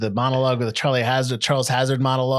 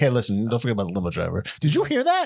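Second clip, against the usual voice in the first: animated delivery with pitch swooping all over; 2 semitones lower than usual. Quoting a film scene to another speaker: imitating Gus. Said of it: "And then he's just like".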